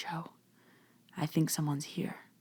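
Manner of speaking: quiet, soft, hushed whisper. Retelling whispering to someone at a dinner table: retelling a whisper. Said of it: "I kinda whisper to Joe".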